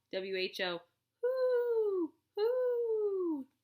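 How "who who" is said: very high, drawn-out owl hoot on the word "who". Going over sight words aloud, saying the word like an owl. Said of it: "say it like an owl".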